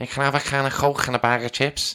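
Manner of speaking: Liverpool accent. Showing a put-on accent while debating impersonation: Scouse accent. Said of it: "do a Scouse accent right now".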